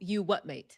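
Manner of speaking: put-on British accent, tossed off. Closing the show while everybody does a british accent; british accent. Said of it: "Everybody is in a British accent".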